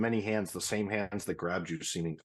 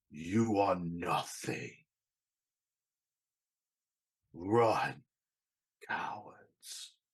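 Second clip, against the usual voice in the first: great dragon speaking. Narrating a game scene, the dragon head turns to the players: booming dragon voice. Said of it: "booming voice carrying across the air".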